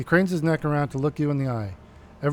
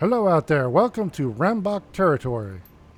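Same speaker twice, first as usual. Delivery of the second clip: voice brimming with pride. Narrator reads the rambach boss calling out again, brimming with pride. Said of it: "her voice brimming with pride".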